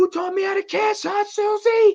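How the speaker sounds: very high, loud, shrill, furious-sounding yell. Retelling a movie scene, yelling at the doll case: imitating someone yelling. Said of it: "she starts yelling at the doll case".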